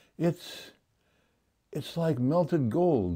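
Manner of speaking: high, gasped words, catching breath. A badger, after drinking cider from the jar, speaks to his friend, gasping. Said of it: "he gasped".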